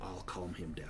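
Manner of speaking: speaking in a whisper. Voicing a servant escorting the players out: whispering. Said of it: "And then he whispers to you".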